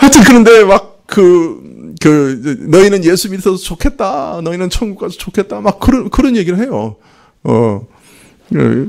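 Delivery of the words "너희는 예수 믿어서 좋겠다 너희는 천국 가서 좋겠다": put-on crying while speaking, tearful, higher pitch. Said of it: "막 울면서 하는 얘기가".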